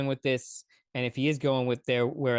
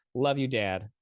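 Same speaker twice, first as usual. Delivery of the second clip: sarcastic, mocking tone with insincere affection. Addressing father after talking about their relationship: sarcastic. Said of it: "that sounded more sarcastic than it was supposed to".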